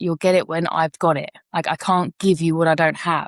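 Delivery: ordinary delivery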